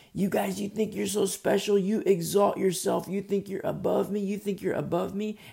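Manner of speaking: high-pitched hollering. Retelling a man yelling up from a descending elevator: imitating a man yelling. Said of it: "And he's yelling because we're getting further apart".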